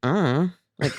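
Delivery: put-on voice of a hypnotized man. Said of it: "it had a very teenage vibe when he was like".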